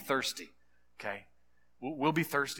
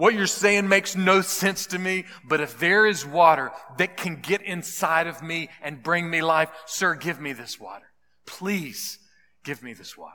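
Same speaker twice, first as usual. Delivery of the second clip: mock desperate pleading woman's voice, higher and louder; 3 semitones higher, 6 dB louder than usual. Retelling a woman's reply to Jesus, imitating a desperate woman pleading. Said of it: "this desperate woman responded".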